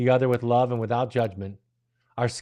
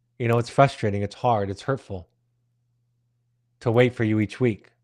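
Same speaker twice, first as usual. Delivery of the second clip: put-on firm, assertive, clearly spoken delivery. Retelling what was said to a late professor: retelling own words assertively and clearly. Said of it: "I said it assertively and clearly".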